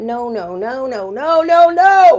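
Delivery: booming, very slow, drawn-out yell climbing in pitch. Speaker acts out what we've been told over the years, retelling a yell. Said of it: "Sorry for yelling".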